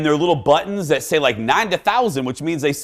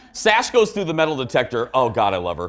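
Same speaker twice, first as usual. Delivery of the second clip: ordinary talk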